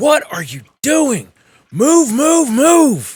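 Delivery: very loud, high, shrill barked shouting. Voicing a character shouting from behind as they retreat: Freya shouting. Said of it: "Freya from behind you shouting".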